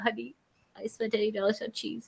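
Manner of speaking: hushed half-whisper under the breath. Retelling what you told your husband after a big cheese purchase, retold half-whisper. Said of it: "You were whispering".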